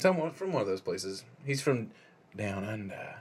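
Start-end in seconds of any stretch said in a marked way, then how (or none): 1.4-3.1 dark, ominous, foreboding tone. Saying where a film's actor is from: ominous tone. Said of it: "Love how you said it so ominously".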